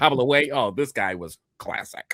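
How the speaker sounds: mock giddy tour guide voice. Describing a ghost tour, imitating a giddy tour guide. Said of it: "the tour guide is very giddy".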